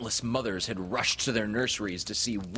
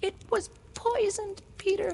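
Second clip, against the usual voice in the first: tender, gentle, very high-pitched voice. Narrator reading Tink's line to Peter, said softly. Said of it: "she told him softly".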